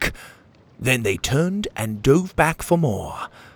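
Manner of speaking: ordinary delivery, nothing marked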